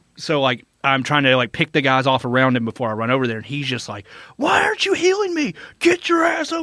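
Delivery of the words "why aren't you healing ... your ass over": put-on very high screaming yell. Retelling a fellow player demanding healing in a game, imitating someone screaming. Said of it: "screaming at me".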